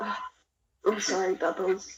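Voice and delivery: whispering under breath. Apologizing in character to a frog named bubbles: whispering under breath. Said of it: "I'm just gonna whisper in my breath".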